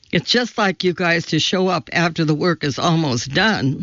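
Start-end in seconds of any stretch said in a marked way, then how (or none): none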